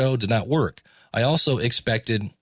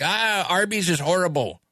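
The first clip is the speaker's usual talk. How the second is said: put-on slow, pitched-up cranky old man grumble; 7 semitones higher than usual. Speaker mimics how he sounded on every episode: imitating a grumpy old man. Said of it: "I just sounded like a grumpy old man".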